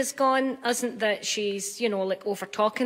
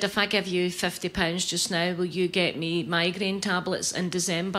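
ordinary talk

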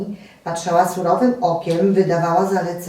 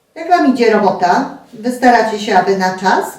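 loud, cross, angry tone; 3 semitones higher, 6 dB louder than usual. The landlady checks on how the work is going, asking angrily. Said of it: "Pytała gniewnie".

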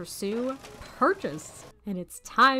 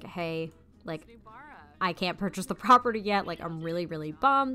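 usual speaking voice

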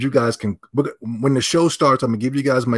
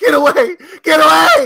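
very high, very loud, stretched-out screaming; 9 dB louder than usual. Retelling how fans react when he comes around: imitating fans screaming. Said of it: "They just start screaming at me".

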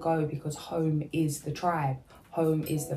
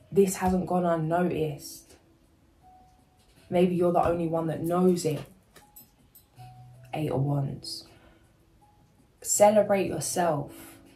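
choking up, about to cry; 3 dB louder than usual. Reading out the Eight of Wands card to viewers, choking up. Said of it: "I'm gonna cry".

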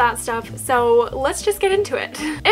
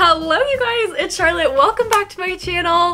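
giddy, overexcited, bubbly delivery; 4 semitones higher than usual. A YouTuber greets viewers at the start of her video, giddy greeting. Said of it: "I don't know why I said that so giddy".

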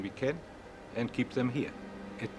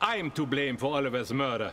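put-on villainous German accent; 3 semitones higher, 3 dB louder than usual. A character addresses the group in a german bad-guy accent. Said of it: "why does he sound like a German guy that's a bad guy".

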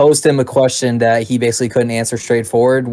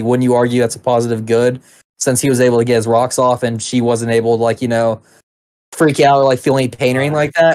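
usual speaking voice

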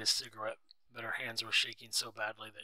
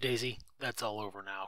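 plain

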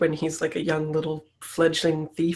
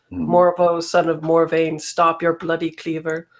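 loud, booming, calling voice; 5 dB louder than usual. A player's character calls out to name him in a dramatic moment, booming voice. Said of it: "I call out in, like, a booming voice".

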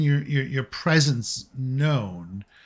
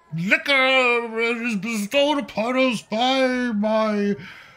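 put-on drunk, woozy priest voice, much higher; 10 semitones higher than usual. A drunk priest stands on a table giving a feast speech, drunk woozy voice.

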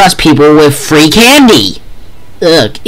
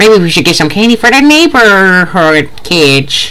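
put-on elderly old granny voice; 4 semitones higher than usual. Speaker showing off a new impression: granny impression. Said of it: "That's my new granny impression".

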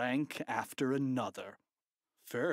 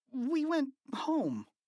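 jittery, nervous stammer, very high-pitched; 13 semitones higher, 3 dB louder than usual. Narrator reads Harold answering Principal Krupp, stammering nervously. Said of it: "Harold stammered nervously".

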